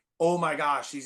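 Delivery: ordinary talk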